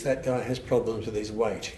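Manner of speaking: ordinary delivery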